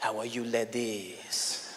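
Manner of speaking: seductive French accent, low, slow, very drawn out. Explaining how every accent carries a connotation, the speaker demonstrates: sexy French accent. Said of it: "You speak with a French accent".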